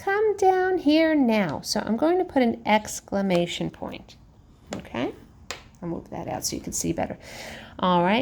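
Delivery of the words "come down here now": mild half-shouted yell, pitched up. Teacher demonstrating a sentence that needs an exclamation point, yelling a little. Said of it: "Now I'm yelling a little bit".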